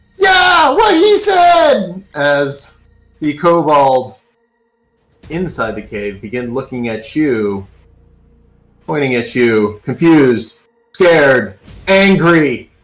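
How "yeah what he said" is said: very high, tiny, snide, obnoxious kobold voice. A game master voices a tiny kobold flying by the cave entrance: dickish kobold voice. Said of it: "you hear the voice of a little, tiny, dickish kobold go".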